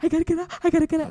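high, panicked, repeating voice.

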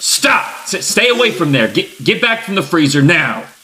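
alarmed, high, urgent shout. A cook orders a visitor away from the freezer, shouting. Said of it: "I'm sorry for shouting".

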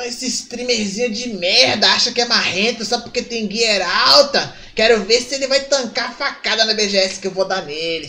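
mock-furious, threatening, acted-out angry voice. Retelling a man's angry messages about a streamer, in a put-on furious, threatening tone. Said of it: "Ficou putão".

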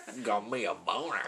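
slow, drawling put-on southern accent. Saying a word after being asked for a southern accent. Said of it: "With a southern accent".

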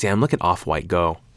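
ordinary talk, nothing marked

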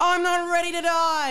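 shrill, very high-pitched yell. Reading a story's dialogue aloud, Luke's line, yelled. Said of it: "yelled Luke".

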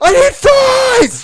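put-on screaming. Retelling ordering fries at a drive-thru intercom: imitating screaming. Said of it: "I start screaming fries at the goddamn intercom".

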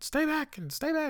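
very high hollering from several feet away. Retelling how a woman started hollering at him from feet away. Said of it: "She starts hollering".

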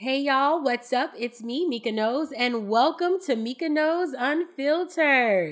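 energetic, excited delivery. Opening the episode after time away, hyped up. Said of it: "I seem a little hype right now".

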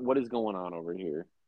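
acting very confused. Joking about an old man lost in a vr headset, acting very confused. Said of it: "very confused".

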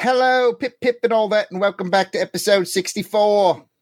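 high-pitched, half Australian, half British accent. Opening the podcast outtakes in a half australian, half british accent. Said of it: "It was like Australian, half British".

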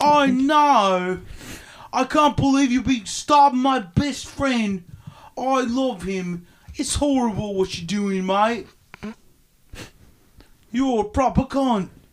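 put-on British accent. Mimicking a movie character's line about a stabbed friend: imitating british accent. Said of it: "it's in a British accent".

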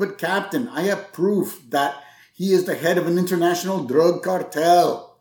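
put-on heavy German accent, laid on thick. Retelling a scene where McBain confronts the captain, in his thick German accent. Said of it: "in his thick German accent".

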